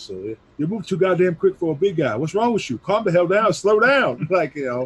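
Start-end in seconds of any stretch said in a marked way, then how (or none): 0.6-4.3 loud, high put-on scolding trainer voice. Recalling what a trainer said during training, imitating trainer's voice. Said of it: "I'm going to do his voice".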